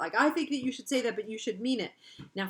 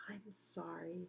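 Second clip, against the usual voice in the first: low, soft voice; 3 semitones lower, 15 dB quieter than usual. Narrating a story, voicing a girl's line after a pause: low voice. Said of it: "she said in a low voice".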